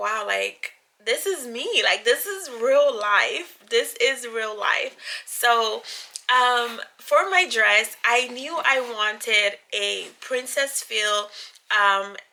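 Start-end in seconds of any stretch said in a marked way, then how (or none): 0.0-4.9 tearful, weepy, overcome with wonder. Retelling receiving the wedding dress in person: imitating own past crying. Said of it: "crying and just like".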